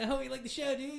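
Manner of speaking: very high-pitched, bubbly dude voice. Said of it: "he was just like".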